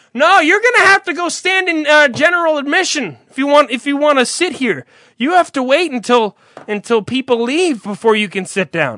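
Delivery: put-on high, loud Chicago accent. Retelling being told to go stand in general admission, in a Chicago accent impression. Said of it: "Is that your Chicago accent?".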